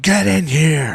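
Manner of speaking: high, screaming scary clown shout, acted out. Recalling being the scary clown visitors saw first, re-enacting screaming at them. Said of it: "I would be screaming".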